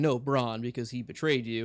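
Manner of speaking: plain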